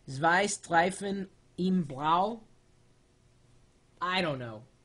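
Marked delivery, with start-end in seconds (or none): 0.1-2.4 put-on German accent, very slow. Speaker reads a German-looking phrase in a pseudo-German accent. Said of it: "I'm going to do it in my best German accent".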